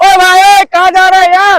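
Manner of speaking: very loud, shrill, high, drawn-out shout. Showing strength in the throat, speaker demonstrates a shouted dialogue line. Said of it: "dialogue बोलना है यहाँ से चिल्ला के".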